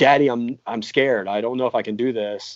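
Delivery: imitated crying, tearful child voice. Retelling a five-year-old daughter's words before gymnastics: imitating a crying child. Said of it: "was crying and said".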